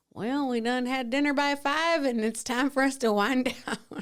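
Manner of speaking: put-on elderly, folksy old-folks dialect. Joking that they are like old people, put-on old-folks accent. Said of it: "I don't know where that accent came from".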